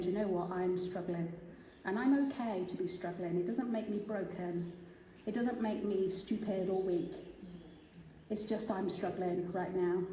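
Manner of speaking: ordinary talk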